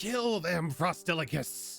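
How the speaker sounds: high, barking, commanding goblin shout. Voicing a goblin on a snowman's back ordering it to attack: goblin voice shouting an order. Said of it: "the goblin that's on its back says".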